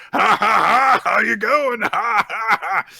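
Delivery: acted, very loud, very high emphatic laughter. Retelling how an annoyed rival greets the captain: imitating Kaneda's emphatic laugh. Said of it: "really, really emphatically going".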